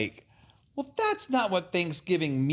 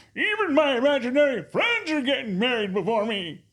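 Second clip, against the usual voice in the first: put-on grumpy old man voice, higher; 9 semitones higher, 3 dB louder than usual. Doing a grumpy old man voice after being asked: grumpy old man voice. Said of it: "You want me to break out my grumpy old man?".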